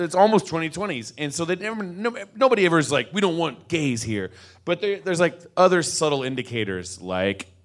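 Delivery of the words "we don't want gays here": normal talking voice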